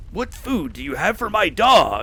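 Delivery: passing video game orc voice, barked. Describing a video game NPC remark to a friend, Oblivion orc voice. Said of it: "Is that your Oblivion voice?".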